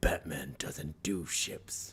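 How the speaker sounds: very slow, breathy, put-on heroic voice. Quoting a line from a movie: Lego Batman voice. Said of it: "When he goes, "Batman," he's like".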